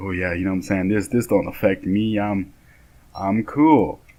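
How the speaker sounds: put-on macho, nonchalant, swaggering tough-guy voice. Retelling how he imagined acting on the bus: imitating acting tough and manly. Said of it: "I'd be tough and act all, like, manly".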